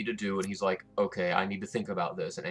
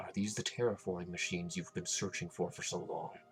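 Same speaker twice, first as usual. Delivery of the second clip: speaking with voice lowered; 8 dB quieter than usual. Player in a roleplay asking about the terraforming machines, in a lowered voice. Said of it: "I'm gonna lower my voice".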